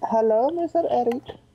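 put-on high-pitched Indian accent. Pretending Jesus is calling about the game, Jesus with Hindi-sounding accent. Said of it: "I don't know why he sounded Hindi".

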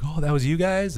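high, excited, surprised voice.

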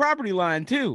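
put-on high-pitched, outraged Michigan accent. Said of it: "That's how they talk in Michigan".

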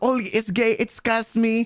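put-on French accent. Retelling how a friend imitated a woman's remark: French accent. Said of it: "like in like a French accent".

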